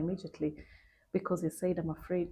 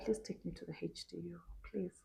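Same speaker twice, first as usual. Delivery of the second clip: put-on pleading voice, quieter; 9 dB quieter than usual. Retelling being taken to intensive care: imitating her own pleading. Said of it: "I was pleading".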